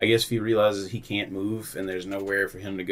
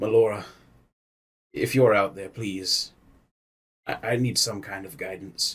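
winded, out-of-breath delivery. A player speaking in character, slumped against a statue: out of breath. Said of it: "out of breath".

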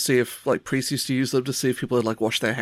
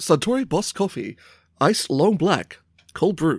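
read like a commercial, advert announcer delivery; 4 semitones higher than usual. Answering whether they've had coffee yet, saying it like an ad. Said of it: "saying it like it's an ad?".

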